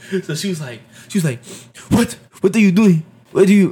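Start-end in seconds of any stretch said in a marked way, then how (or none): 1.9-3.7 bad, fake Russian accent. Retelling a woman's reaction, doing her in a bad russian accent. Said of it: "she had a Russian accent too".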